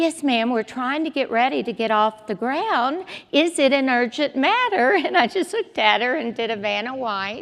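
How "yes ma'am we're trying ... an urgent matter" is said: polished, very professional, nice flight-attendant voice. Speaker retells what a woman said on coming over to her: imitating a professional, nice voice. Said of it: "in a very professional, nice voice".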